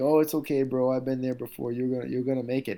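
put-on loud, high-pitched Hawaiian accent. Recalling a veteran fighter encouraging him on the bus; Max Holloway's Hawaiian accent. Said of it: "in his Hawaiian accent".

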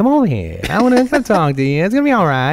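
high, creepy, coaxing voice.

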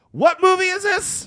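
mock yell, pitched very high. Retelling an old man interrupting a movie screening, retelling a yell. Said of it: "sits down and then yells".

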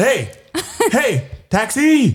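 put-on, very high-pitched calling shout. Retelling hailing a cab for an old lady: imitating own taxi hail. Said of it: "that's how you hail a taxi".

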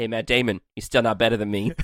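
plain

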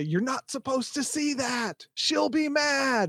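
shrill, very high-pitched shout. Voicing a character who pins a player to the ground: yelling in character.

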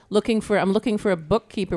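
ordinary talk

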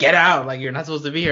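mock half-shout, low-key, mild and half-hearted. Retelling a scene where Hordak orders Entrapta out: imitating Hordak shouting. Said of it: "Hordak is shouting".

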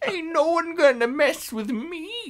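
put-on squeaky, very high, old-time 1920s gangster voice. Retelling how he sounded, in a 1920s gangster voice. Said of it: "he sounded like a 1920s gangster".

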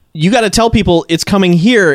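plain

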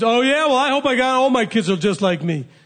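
high wise-guy tone. Acting out a reply to a mother's curse: imitating a wise-guy comeback. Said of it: "don't be a wise guy".

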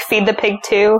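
ordinary talk, nothing marked

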